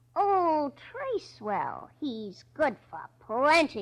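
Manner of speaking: put-on smug, relishing, gloating tone. Stubby retells voices he overheard outside, retelling a gloating voice. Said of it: "answered in a sort of gloating voice".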